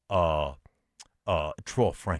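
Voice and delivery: put-on deep, hushed, very low, soft Cajun accent. Caller asking the price of a wide receiver in a trade: cajun accent. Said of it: "I got to do a Cajun accent".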